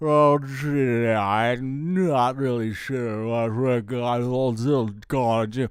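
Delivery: very slow, dopey, goofy put-on voice. Recalling voices he made to amuse the other animators, silly goofy voice. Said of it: "a couple of other silly voices like".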